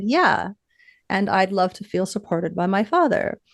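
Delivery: plain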